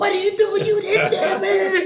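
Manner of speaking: mock, very high-pitched holler. Retelling yelling at the referee from the stands: imitating own yelling at referee. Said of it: "I'm yelling at the referee as if I'm a coach".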